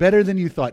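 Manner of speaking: stress on "better". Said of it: "Emphasis on better".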